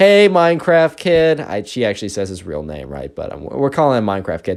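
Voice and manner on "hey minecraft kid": very loud, high hailing call, acted out. Retelling a girl loudly calling to a classmate: imitating a very loud greeting. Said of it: "very loudly".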